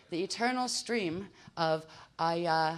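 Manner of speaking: slow, careful, slowed-down reading.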